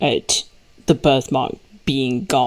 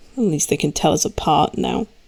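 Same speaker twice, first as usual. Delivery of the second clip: very dry, sorrowful muttered tone; 2 semitones higher than usual. Voicing a character who has lost her birthmark: very dry and sad tone. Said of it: "In a very dry and sad tone".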